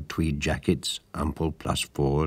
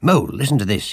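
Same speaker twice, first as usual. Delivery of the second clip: firm, authoritative, commanding, raised calling voice; 7 semitones higher, 5 dB louder than usual. Rat, sitting bolt upright with the weekly paper, to Mole, commanding. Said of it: "he said in a commanding manner".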